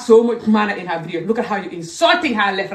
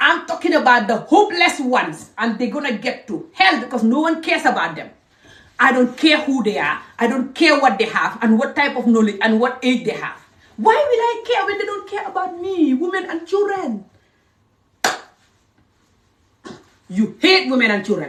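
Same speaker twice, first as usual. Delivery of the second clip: angry rant, higher pitch; 5 semitones higher than usual. Addressing the listeners directly: angry ranting. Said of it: "I'm like your angry African mother now".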